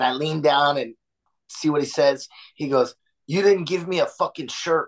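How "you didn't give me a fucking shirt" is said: mock-furious, angry, complaining man voice. Retelling what a guy said to him after the show, imitating a furious man. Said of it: "this guy was furious".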